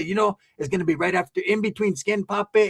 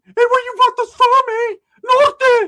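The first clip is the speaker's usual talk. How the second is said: put-on yell, much higher and louder; 6 dB louder than usual. Retelling a man yelling at Southsiders on TV during a movie, retelling a yell. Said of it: "he's like yelling at the Southsiders on T V".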